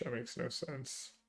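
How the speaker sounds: speaking very quietly.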